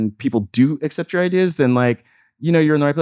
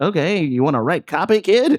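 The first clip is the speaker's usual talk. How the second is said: old-fashioned, old-timey put-on voice, pitched up; 5 semitones higher than usual. Quoting the people who gave them the copywriting job, in an old-timey voice. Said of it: "I don't know why I'm using that old timey voice".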